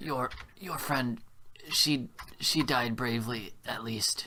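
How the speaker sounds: slow, loud whisper that carries. A prisoner in the cell across the hallway calls over in loud whispers. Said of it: "like loud whispers".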